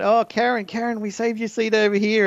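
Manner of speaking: very high, shrill yelling. Retelling how some girls in a theatre called out to a friend, imitating girls yelling. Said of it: "These girls started yelling out".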